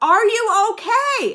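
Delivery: very high, very loud shouting. At a nursing home, a worker asks a hard-of-hearing older man: retelling a very loud question. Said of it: "she's saying it very loud".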